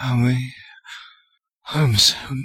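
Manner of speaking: drowsy, sleepy mumble, barely awake. A boy too weak to complain asks while resting on a shoulder, drowsy mumble. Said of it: "He mumbled drowsily".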